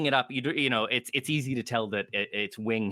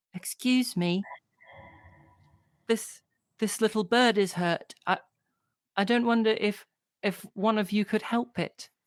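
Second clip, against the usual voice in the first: put-on pleading, begging little girl voice, much higher; 8 semitones higher than usual. Game master voicing a girl asking the players for help, pleading little girl voice. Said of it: "pleading eyes, and she says".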